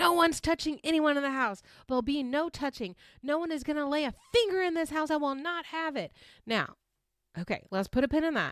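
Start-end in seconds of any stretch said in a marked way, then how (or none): 0.0-6.1 frantic, high, wigged-out half-shouted voice. Retelling a reality show fight: imitating Taylor yelling. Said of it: "Taylor is yelling".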